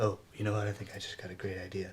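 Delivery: quiet half-whispered aside. Sitting in a car with others, a character speaks in a half-whisper. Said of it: "Why are you whispering?".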